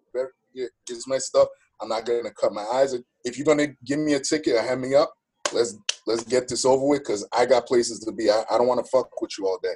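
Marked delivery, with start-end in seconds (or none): none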